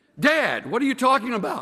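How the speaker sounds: high-pitched frightened yelling. Joke teller voices the son hearing his father's divorce news, retelling a son's yell. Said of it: "the son yells".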